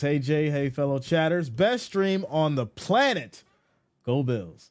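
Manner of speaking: ordinary delivery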